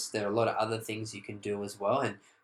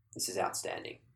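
put-on bone-dry deadpan, hushed, breathy near whisper; 3 semitones lower, 8 dB quieter than usual. Retelling a man's answer to the speaker's question, imitating his dry deadpan. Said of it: "in that complete dry deadpan face".

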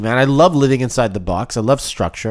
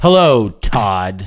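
hostile, antagonizing, irritating inflection; 4 semitones lower, 3 dB louder than usual. Greeting todd while deliberately playing adversarial, hostile greeting tone. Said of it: "If you greet somebody with that tone".

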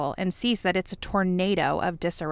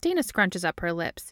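plain

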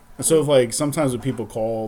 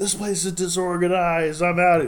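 high, angry, frantic shouting yell; 8 semitones higher than usual. Retelling a guy at work who lost it, retelling a coworker's yell. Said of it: "he was like yelling".

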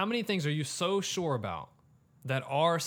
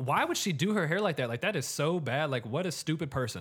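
normal talking voice

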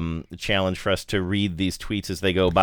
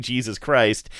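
ordinary delivery

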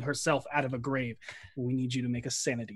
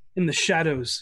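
plain

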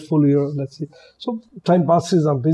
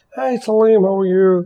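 put-on typical American accent, higher, slower; 4 semitones higher than usual. Retelling a phone call where Henry picks up, imitating Henry's American accent. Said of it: "Typical American accent".

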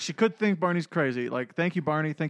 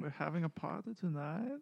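plain, straight, unembellished line delivery; 12 dB quieter than usual. Quoting a cartoon line the way the voice actor said it: imitating Hank Azaria's line delivery. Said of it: "and he just says it like that".

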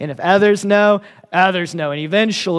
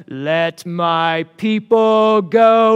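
very slow, drawn-out epic proclamation, words stretched; 2 semitones higher than usual. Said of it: "all I can see and hear here is Charlton Heston".

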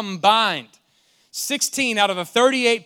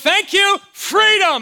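shrieked shout at a very high pitch; 10 semitones higher, 4 dB louder than usual. Retelling being freed after being trapped in a garage, retelling own scream. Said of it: "I'm screaming freedom through the entire garage".

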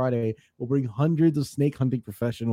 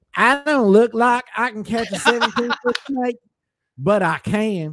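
put-on Florida accent, raised and pitched-up; 8 semitones higher, 5 dB louder than usual. Pushed by the others, reading a python huntress's quote in a Florida accent. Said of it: "do the accent correctly".

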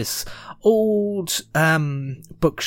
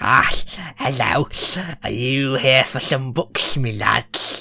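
put-on old crone voice; 2 semitones lower than usual. Voicing an old crone behind a bookshop counter: old crone voice. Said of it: "old crone who's sat behind the".

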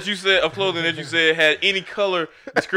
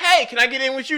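pitched-up voice in a raised register; 7 semitones higher than usual. Redoing another person's request to get in, to show the pitch, pitched higher. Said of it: "Now you go up 2 semitones".

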